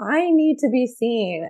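put-on high, slow, crying-out child's voice. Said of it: "your child's just screaming".

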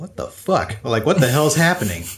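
ordinary talk

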